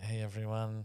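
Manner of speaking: soft, timid, beginner-like delivery.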